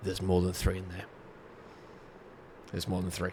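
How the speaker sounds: very quiet, quick, discreet aside. Warning Oza in character about more than three: speaking very quietly in character. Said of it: "and I say very quietly".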